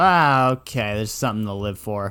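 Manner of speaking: plain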